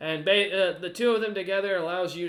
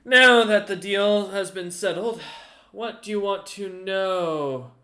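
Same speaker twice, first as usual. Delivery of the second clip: laughing, smiling, amused, raised, drawn-out "know"; 2 semitones higher, 5 dB louder than usual. Voicing a character in a tabletop game once a deal is settled, smiling, amused. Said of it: "Kind of smiles and laughs and goes".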